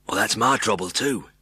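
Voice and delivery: murmured, with a husky edge. Narrator reads Ron's line to the others in a soft, husky murmur. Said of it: "murmured in a soft, husky voice".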